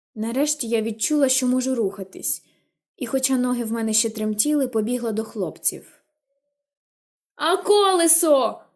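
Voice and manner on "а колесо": high, bellowing holler. Narrator reads a boy's line shouted to the girl, bellowing. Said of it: "загорлав Джем".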